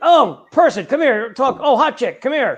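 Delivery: high, excited, eager calling out. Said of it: "It's like".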